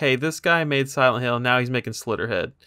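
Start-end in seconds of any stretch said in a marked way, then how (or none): none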